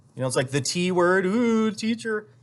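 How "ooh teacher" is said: high, mocking sneer on ooh. Retelling how people react on hearing the job: imitating a sneering tone. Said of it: "give me a big sneer".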